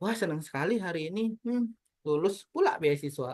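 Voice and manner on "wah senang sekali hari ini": glum, unhappy, joyless delivery. Contrasting intonations, saying a happy line with unhappy intonation. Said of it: "Itu adalah ekspresi tidak bahagia".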